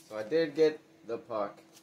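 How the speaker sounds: ordinary talk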